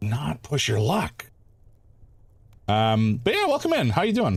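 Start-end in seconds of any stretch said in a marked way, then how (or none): 0.0-1.3 hushed, hissing goblin voice, under the breath. As the goblin, warning the cleric, hissing under his breath. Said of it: "he hisses at you under his breath".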